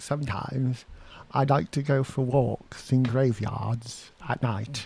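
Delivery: put-on slow, unhurried old-time woman's voice, forties style. Quoting a woman interviewed in the late nineteen forties: imitating a 1940s interviewee's voice. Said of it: "I got that woman's voice in my head".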